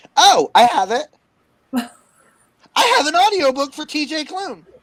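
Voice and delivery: very loud, very high, thrilled excited yell. Finding the audiobook the others were looking for, excited yelling. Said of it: "Why are you yelling?".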